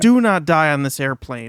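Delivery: acted desperate pleading tone. Retelling a woman pleading with a man, imitating desperate pleading. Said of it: "pleading with".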